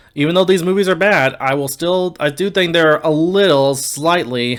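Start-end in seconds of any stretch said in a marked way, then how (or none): 3.8-4.6 emphasis placed on the word slightly. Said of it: "emphasis on slightly".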